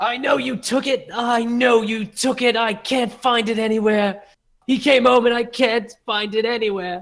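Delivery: hysterical yelling, very high, shrill and loud. Retelling an overheard woman accusing a man at a table, imitating hysterical yelling. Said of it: "she's like hysterical, yelling at this guy".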